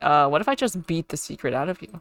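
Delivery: plain reading voice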